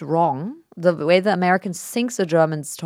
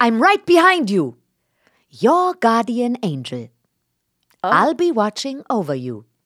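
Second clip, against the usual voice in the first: canned, automated video game character voice, swooping; 5 semitones higher, 4 dB louder than usual. Role-playing game voice lines while the other speaker plays the player, automated game voice. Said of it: "You actually do sound like you're automated".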